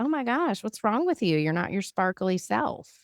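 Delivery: woman's voice, high exclamation. The speaker retells what a woman said to her at an event, imitating a woman's voice. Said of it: "she said it just like that".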